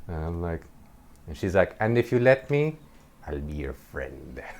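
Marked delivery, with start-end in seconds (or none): 1.8-4.4 strange, weird put-on witch voice. Retelling what her psychiatrist said, in a weird witch voice. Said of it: "with this weird witch voice".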